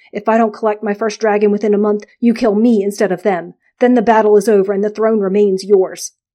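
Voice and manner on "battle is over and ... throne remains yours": ordinary delivery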